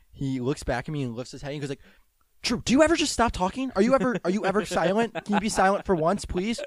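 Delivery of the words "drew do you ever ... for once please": mad, fed-up stumbling rant, stammered, pitched up. Retelling how the coach snapped at a chatty player mid-game: imitating Coach Kirshner getting mad. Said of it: "stumbles with his words when he gets really mad".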